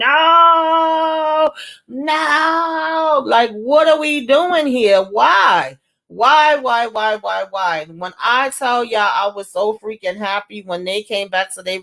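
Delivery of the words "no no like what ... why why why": put-on very slow, high, drawn-out, exasperated yelling. Speaker retells how they reacted to a show on TV: retelling yelling at the TV. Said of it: "The way I was yelling at my T V".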